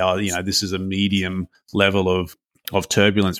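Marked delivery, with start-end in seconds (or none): none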